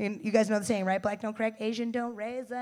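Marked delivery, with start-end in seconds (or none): none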